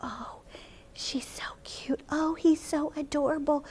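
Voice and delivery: whispered, hushed, gentle voice, slow. Showing children how to talk to a held baby: talking quietly to a baby. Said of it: "You wanna talk quietly to a baby".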